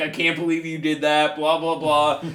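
imitated tearful, crying voice. Retelling what a crying woman said in the car: imitating someone crying. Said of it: "She's crying".

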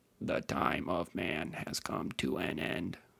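slow, drawn-out, creaky, rough rasp. Repeating a robot golem's quoted line: Blitzcrank voice. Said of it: "I should say that like Blitzcrank".

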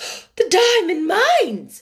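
shocked, high-pitched, gasped-out outburst. Miss Minchin hears news about Sarah's fortune from Mr Carmichael; gasped out. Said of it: "Miss Minchin gasped out".

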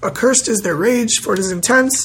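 ordinary talk

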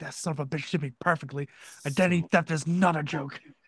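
put-on angry voice. Imitating Soups reacting to the impression: imitating Soups being pissed. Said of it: "Soups is so pissed right now".

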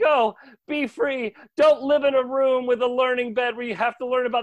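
mock very high, shrill, shrieked yelling. Retelling a hero freeing orphans, quoting Dean: imitating Dean yelling. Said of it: "he's yelling things like".

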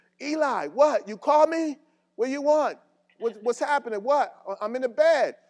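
shrill, high, loud bewildered yell. Imagining being called at night, answering from the other room, retelling a yell. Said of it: "I would yell in the other room".

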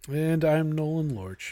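flat, unenthusiastic, low-energy delivery. Introducing yourself at the start of a podcast: flat, unenthusiastic. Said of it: "can you get a little enthusiasm in here?".

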